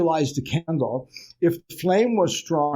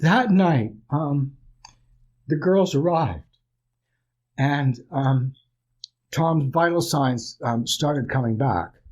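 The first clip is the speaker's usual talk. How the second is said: heartfelt, emotional, overcome and moved. Continuing a memory right after apologizing for being emotional: emotional. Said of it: "I get really emotional".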